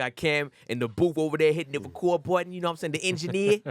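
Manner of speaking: put-on New York-accented speech. Podcast host introduces the crew and the engineer in the booth: New York accent. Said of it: "was that like a New York accent?".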